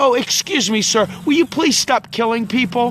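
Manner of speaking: sweet, gentle, kind and overly courteous tone. Acting out an overly polite request, in a mock-sweet polite tone. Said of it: "I want to be sweet and kind".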